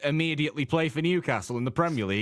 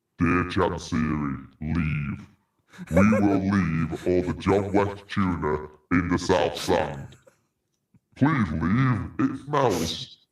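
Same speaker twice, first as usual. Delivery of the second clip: very low, dropped voice; 8 semitones lower, 3 dB louder than usual. Told to put the voice on again for a ransom tape and state demands: Darth Vader voice. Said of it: "Now put the voice on again and tell us your demands".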